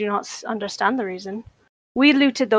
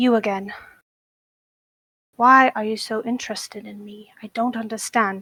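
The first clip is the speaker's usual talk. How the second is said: quiet muttered whisper under breath. Speaking in character to a watching presence: whispering under one's breath. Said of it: "Kind of whisper underneath my breath".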